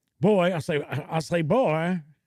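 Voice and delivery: cartoon rooster character voice. Reacting to a creature image by quoting the cartoon rooster: Foghorn Leghorn voice. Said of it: "Foghorn Leghorn is always tangling with".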